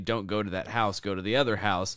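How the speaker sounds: ordinary delivery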